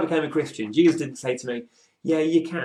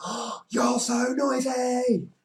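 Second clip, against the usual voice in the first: very high, drawn-out, play-acted playful shout; 11 semitones higher than usual. Recalling how a woman answered someone's angry shouting, the speaker quotes her: retelling a playful shout. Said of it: "shout back, but in a fun way".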